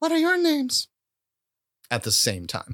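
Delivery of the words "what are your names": very high-pitched character voice. Voicing Dear Liza speaking through Attaboy's moving mouth: Dear Liza voice. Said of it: "but Liza does this voice".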